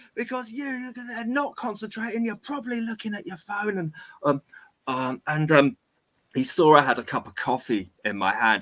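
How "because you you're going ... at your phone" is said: mock shrill, very high, bellowing workman rant. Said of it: "he just starts bellowing at me".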